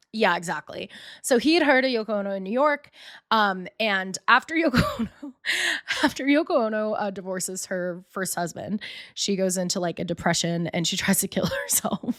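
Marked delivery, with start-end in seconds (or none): 3.7-12.1 giggling and laughing through the words. Telling a story to another speaker, laughing while talking. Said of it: "Why are you laughing?".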